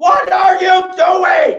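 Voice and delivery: high, loud, exasperated, disbelieving scream. A father recounting his son's first game, retelling a scream. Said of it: "I'm screaming".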